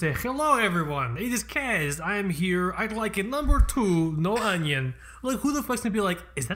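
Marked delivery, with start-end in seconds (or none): 0.1-4.9 put-on Eastern European Slavic accent. Joking self-introduction and food order in a fake Slavic accent. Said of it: "that is not a sexy accent that I just did".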